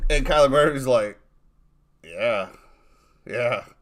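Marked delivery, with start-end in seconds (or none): 2.0-3.6 emotionless, totally unmoved flat voice. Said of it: "No emotion whatsoever".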